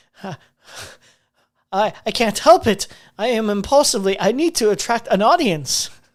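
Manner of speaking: voice cracking, barely holding together. Acting out a made-up scene as a streamer caught by his partner: breaking down. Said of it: "breaking down".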